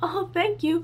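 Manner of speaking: smallest, squeakiest little mouse voice. Recalling replying to a man who praised the speaker's shirt, retelling a tiny squeaky voice. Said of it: "in the smallest, squeakiest mouse voice ever".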